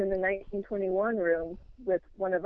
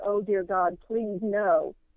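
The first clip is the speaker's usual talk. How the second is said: acted-out, put-on horrified scream. Telling of a vision that freaked them out, the speaker retells a scream. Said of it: "I just immediately screamed".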